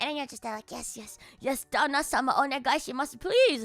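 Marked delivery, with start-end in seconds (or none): none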